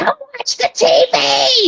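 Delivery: grating, shrill, very high-pitched voice. Speaker describes an actress's voice and mimics her grating high voice. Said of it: "that really grating kind of like".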